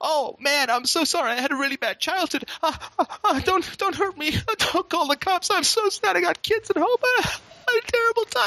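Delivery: very high, fake, put-on sobbing pleading. Acting out a disarmed mugger begging not to be hurt: mock pleading for sympathy. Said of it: "He's just gonna start milking that shit".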